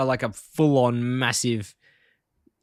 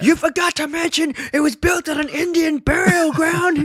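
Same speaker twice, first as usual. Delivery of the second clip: high, slow, irate put-on cartoon-dad shout. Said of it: "you just have to hear how irate Homer is".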